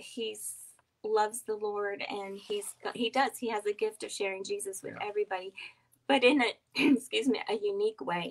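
emotional, choked-up voice welling with feeling. Talking with another speaker about raising kids, getting emotional. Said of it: "I'm getting emotional".

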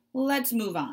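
spoken with a sigh. A narrator reads a beaver moving the talk on, sighing. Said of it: "Mr. Beaver sighed".

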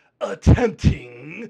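attempting drawn out, slow, loud, heavily stressed. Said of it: "emphasis on the word, attempting".

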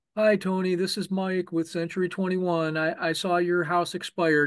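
bored, unenthusiastic, flat monotone delivery.

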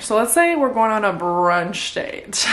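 ordinary delivery

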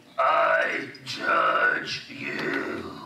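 throaty, guttural voice from the throat. Retelling what a guttural voice from a little girl said to them: imitating a guttural voice. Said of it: "this guttural voice, comes out of this little girl".

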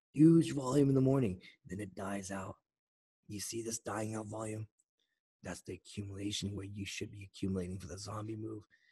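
hushed whisper. A speaker addressing viewers switches to whispering. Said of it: "So I'm gonna start whispering".

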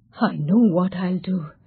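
plain reading voice

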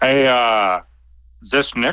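hard, no-nonsense businessman voice. Recounting a phone call from a company owner, imitating Stefano. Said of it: "I'll do my impression of Stefano".

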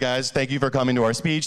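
flat, lifeless monotone with no inflection. Speaking tip showing how not to talk: flat monotone. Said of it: "don't talk like this. Don't be monotone".

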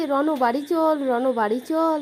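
ordinary talk, nothing marked

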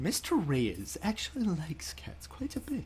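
very hushed, soft, low, calm courtly gentleman's voice. Mimicking how the other person just said a line, imitating calm gentlemanly tone. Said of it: "such a calm, like, gentlemanly-like fashion".

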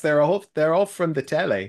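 terrible, bad British accent. Joking that the commercials are all from the telly: terrible british accent. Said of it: "It's my terrible British accent".

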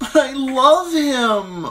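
very high, very loud, very slow frightened wail. Sansa answers the one who questions her marriage with a frightened wail. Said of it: "Sansa wailed, confused and frightened".

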